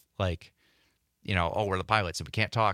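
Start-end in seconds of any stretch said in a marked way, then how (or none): none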